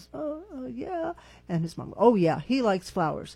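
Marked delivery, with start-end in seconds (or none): 0.1-1.1 put-on soft, pitched-up, bashful, timid kid voice. Speaker retells asking a boy if he likes flowers, imitating a shy kid. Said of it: "And he kind of shyly goes".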